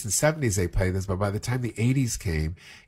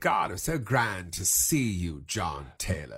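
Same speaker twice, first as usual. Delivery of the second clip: soft, slow, hushed mid-Atlantic accent; 2 semitones lower, 5 dB quieter than usual. Speaker recreating his film role as the journalist, Mr. Wills mid-Atlantic accent. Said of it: "Very mid-Atlantic".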